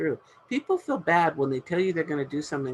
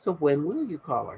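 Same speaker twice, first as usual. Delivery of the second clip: kind, gentle, encouraging coach tone. Demonstrating a reply to someone who says they could call friends, gentle coaching voice. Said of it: "a coaching voice is a gentle voice".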